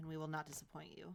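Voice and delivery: very quiet voice. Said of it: "says very, very quietly".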